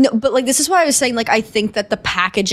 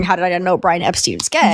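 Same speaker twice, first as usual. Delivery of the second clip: usual speaking voice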